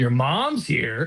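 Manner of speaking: leering lecherous voice. Retelling own thought on hearing her mom was home: leering horny voice. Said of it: "gooner fucking".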